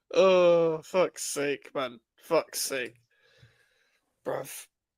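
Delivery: slow, exasperated despair, near tears. Reacting to a team being knocked out of Europe, in exasperated despair. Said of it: "it's driving men to tears".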